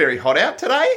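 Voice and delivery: question-like Australian upward rise on final today. Explaining how Australians talk, the speaker demonstrates: rising intonation at sentence end. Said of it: "inflect upwards at the end of their sentences".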